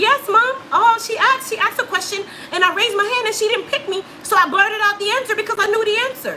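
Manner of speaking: put-on high-pitched, childlike young boy voice.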